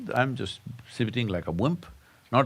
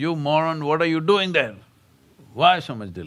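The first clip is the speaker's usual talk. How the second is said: high, loud, rude, impatient screeching parrot voice; 5 semitones higher, 6 dB louder than usual. Telling a story about a parrot yelling at people, retelling the parrot screaming. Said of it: "And the parrot screams".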